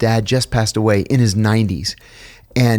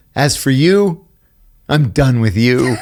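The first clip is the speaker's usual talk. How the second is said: slow delivery, laughing through the words; 3 semitones higher, 3 dB louder than usual. Retelling what the father said to the mother, laughing while talking. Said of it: "I can't even say it with a straight face".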